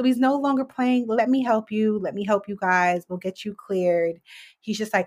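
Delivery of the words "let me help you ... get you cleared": ordinary delivery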